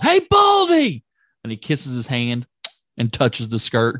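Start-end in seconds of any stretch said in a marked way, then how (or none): 0.0-1.0 very high, loud, shrill yell. Retelling Piper's last line as he's separated from Hogan: imitating Piper yelling. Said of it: "he yells".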